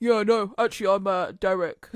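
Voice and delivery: loud, slow, proper manly bloke voice. Retelling how a driver introduced himself, in Derek's proper manly voice. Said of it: "Got like proper manly voice".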